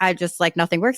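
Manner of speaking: ordinary talk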